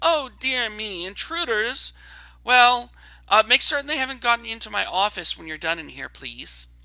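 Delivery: voice set in a high register. A game master voices a character heard through a door, high-pitched voice. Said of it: "you hear a high pitched voice".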